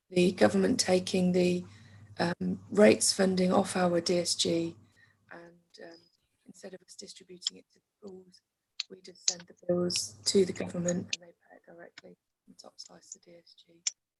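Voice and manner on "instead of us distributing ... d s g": much softer, fading away, faint. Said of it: "you're going a bit faint".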